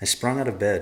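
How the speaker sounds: ordinary delivery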